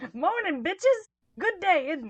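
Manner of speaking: bright cheery voice. Acting out Harry greeting his friends in a good mood: bright cheerful greeting as Harry. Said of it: "he just brightly says".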